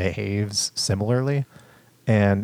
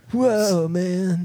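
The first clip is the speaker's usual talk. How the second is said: very high, put-on surfer dude voice; 10 semitones higher than usual. Imitating how a character talks, like a surfer dude. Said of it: "He talks like a surfer dude".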